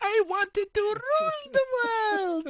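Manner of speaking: very high-pitched, slow, dragged-out put-on voice. Describing a weird, Monty Python-like character to others, imitating a high-pitched voice. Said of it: "he's got like this high-pitched voice".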